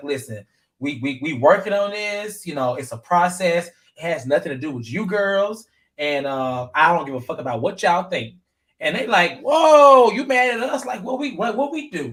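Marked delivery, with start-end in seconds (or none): none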